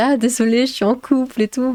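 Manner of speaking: polite, apologetic, laughing through the words. Retelling a friend's reply to a man asking for her number: imitating a friend laughing. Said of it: "mais en rigolant".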